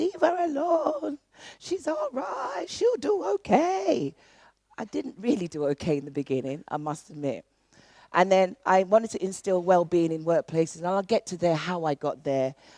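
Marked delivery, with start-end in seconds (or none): 0.0-4.1 put-on very high, slow Jamaican accent. Speaker retells her mum speaking up for her against her father, in a jamaican accent. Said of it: "in her best Jamaican accent".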